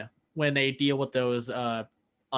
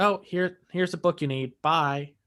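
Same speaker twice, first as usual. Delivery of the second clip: careless, offhand, can't-be-bothered nonchalance; 3 semitones higher than usual. Describing a favourite show character, imitating Kaisa's nonchalance. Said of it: "I just love her kind of nonchalant".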